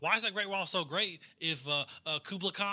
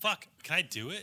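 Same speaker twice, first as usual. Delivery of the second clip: plain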